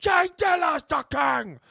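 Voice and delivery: put-on gruff shout. Describing a favorite line, imitating the man's gruff yell. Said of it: "It's that like yelling gruff nature".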